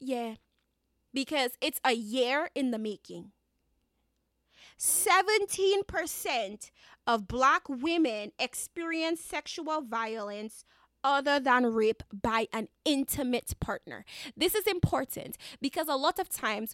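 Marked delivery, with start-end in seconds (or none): 4.8-14.0 slow, drawn-out, deliberate, word-by-word reading. Podcast host rereading a statistic aloud, reading slowly. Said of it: "Let me read it again slow".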